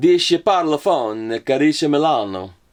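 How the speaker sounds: clumsy, fake, deliberately bad Italian accent. A speaker showing off the bad accents they do, in a bad Italian accent. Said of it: "every every every bad accent that I do".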